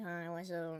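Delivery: low, soft, lazy, low-energy voice. Showing how a greeting sounds when lazy instead of upbeat: lazy low-energy voice. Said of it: "if you're like lazy and like doing nothing, you're gonna be like".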